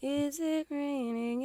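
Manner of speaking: tiny, delicate, very quiet, barely audible voice. Retelling the boat scene in Willy Wonka: tiny delicate Willy Wonka voice. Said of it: "that tiny, delicate voice".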